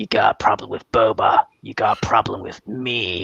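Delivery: raspy voice, rasp on every word. Trying out a hard impression after saying it is hard: raspy Bossk voice. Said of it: "a specific raspy voice".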